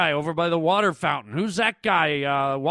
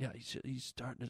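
put-on whisper, lower and quieter; 6 semitones lower, 21 dB quieter than usual. Retelling how a friend suddenly talks in a hush: imitating a friend whispering. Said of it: "You're whispering".

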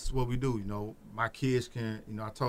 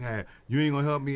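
put-on pleading, louder; 3 semitones higher, 5 dB louder than usual. Retelling his kids asking for help: imitating them pleading. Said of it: "my kids be like".

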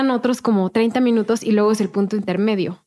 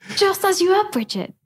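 put-on English accent in a very high voice; 10 semitones higher than usual. Chatting in spanish about english accents, speaking in an english accent. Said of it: "está padre todo tu, tu acento inglés".

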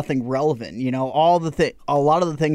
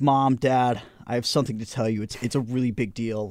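play-acted, very nervous, jittery, worked-up, stumbling words; 2 semitones lower, 3 dB quieter than usual. Retelling a video of a son telling his parents: imitating a nervous voice. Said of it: "super, like, nervous and stuff".

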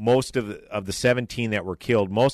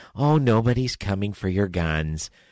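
put-on patronizing, condescending, soothing cooing voice. Mimicking the way lefties coo at you: mock condescending coo. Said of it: "in their condescending tone kind of coo at you".

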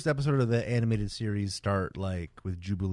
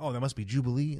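plain

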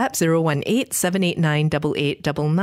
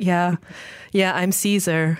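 put-on flat, half-sad delivery. Describing a movie character who keeps saying how great he is: mock deadpan, semi-sad. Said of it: "deadpan, semi-sad way of like".

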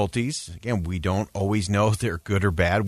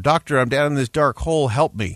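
put-on high-pitched shouting, pleading tone; 5 semitones higher, 3 dB louder than usual. Telling a parable, a man in a hole calls to a doctor: acting a shout for help. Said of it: "he shouts up to the doctor".

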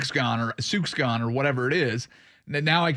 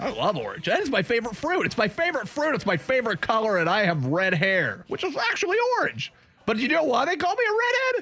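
very high, animated, swooping sing-song voice; 9 semitones higher than usual. Voicing the redhead texter who loves orange: imitating the redhead texter. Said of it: "You think that's what he sounds like?".

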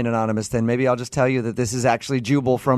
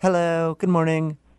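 mock friendly tone, higher; 5 semitones higher than usual. Imitating the front desk lady's morning greeting: imitating the front desk lady's greeting. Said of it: "Her words".

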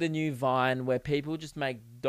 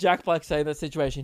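normal talking voice

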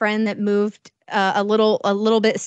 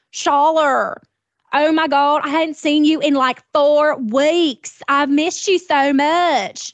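high, jacked-up, exaggerated fake Mississippi accent; 6 semitones higher, 3 dB louder than usual. Speaker quotes a woman greeting them, in a jacked-up wannabe Mississippi accent. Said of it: "spoke with the most jacked up wannabe Mississippi accent".

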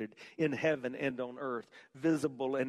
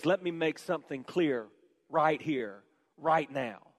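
put-on raised, forceful voice; 4 dB louder than usual. Speaker retelling Paul's reply to people saying Jesus is less than God, acting out a raised voice. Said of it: "he raises his voice".

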